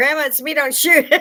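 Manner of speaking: loud, high shouted yell. Retelling how he yelled through the cracked door to his grandma: retelling a yell. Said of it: "And he's yelling".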